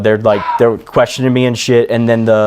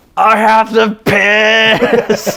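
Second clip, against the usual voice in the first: mock very high, very drawn-out scream; 11 semitones higher than usual.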